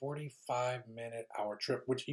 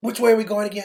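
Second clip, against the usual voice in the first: very loud, high, lost and bewildered, confused tone; 10 semitones higher, 17 dB louder than usual. Retelling how a woman kept asking which way they were going, imitating a confused woman. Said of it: "she had her shoes off".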